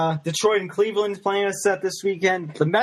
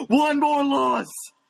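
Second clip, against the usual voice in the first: put-on angry rant, higher and slower; 7 semitones higher than usual. Quoting the start of a favourite movie rant, Danny Glover angry rant impression. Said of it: "the beginning of the rant where he just flips over the table".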